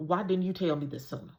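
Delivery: put-on urgent tone. Retelling a friend's question on the phone: imitating an urgent tone. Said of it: "saying it with a sense of urgency".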